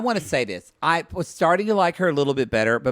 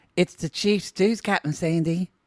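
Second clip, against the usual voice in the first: put-on Australian accent; 3 semitones higher than usual. Acting a scene as Natalia talking to the captain: Natalia in Australian accent. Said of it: "your Australian accent's gonna be".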